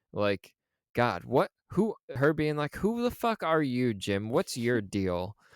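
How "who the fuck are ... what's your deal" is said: mock-frustrated, exasperated outburst. Voicing a woman's reaction to a man she's fed up with, mock-frustrated. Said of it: "her frustration with this whole thing".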